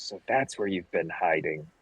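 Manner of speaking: low, menacing, hostile muttered aside. A player's character draws his bow and speaks: muttering under his breath. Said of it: "under his breath he says".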